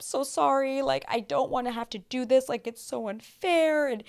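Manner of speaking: play-acted crying, high, tearful, hurt, pleading. Retelling how she apologized to everyone: imitating someone crying. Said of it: "She's, like, crying. She's so sad".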